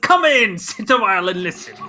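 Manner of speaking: loud, high fantasy dwarf character voice. Imagining someone's voice as a dwarf: Hearthstone dwarf voice. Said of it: "I imagined Dan's voice as a dwarf".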